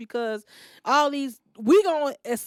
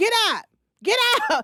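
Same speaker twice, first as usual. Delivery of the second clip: acted-out, very high, swooping holler; 10 semitones higher, 4 dB louder than usual. Retelling how the EMT yelled at the patient: imitating an EMT hollering. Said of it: "she was hollering at him".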